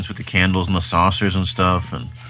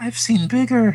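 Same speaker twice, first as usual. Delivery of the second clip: put-on very high-pitched, cat-like old man squeak. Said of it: "the old cat man says".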